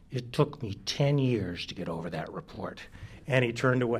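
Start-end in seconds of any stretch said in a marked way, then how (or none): 0.1-2.8 quiet, words forced through gritted teeth. Speaker recalls what a man said to him, retelling speech through clenched teeth. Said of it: "through clenched teeth".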